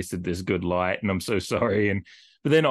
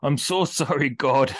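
put-on German-accented lament, much higher, slower; 7 semitones higher than usual. Retelling what a man said on a hilltop at sundown, mock-lamenting in German accent. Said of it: "It's just like in his German accent, just like lamenting".

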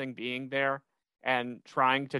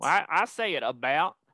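put-on full Southern accent; 3 semitones higher, 3 dB louder than usual. Asked how Americans say a word, the speaker answers; full Southern accent. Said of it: "Will just went full Southern, like Oklahoma jumped out".

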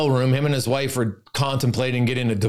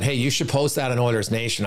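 ordinary delivery

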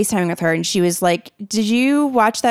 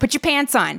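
imitated yell, higher pitch; 5 semitones higher than usual. Retelling how a neighbour yelled at her kid outside: imitating someone yelling. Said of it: "yelling at her kid".

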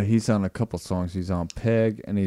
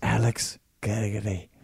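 put-on Irish accent, slightly menacing; 4 dB quieter than usual. Saying the other person's name aloud to try it out, in an Irish accent. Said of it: "your name in an Irish accent".

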